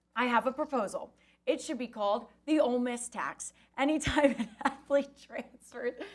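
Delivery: words breaking up with laughter throughout. Reading out someone's proposal, laughing while reading. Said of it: "I'm laughing because this is great".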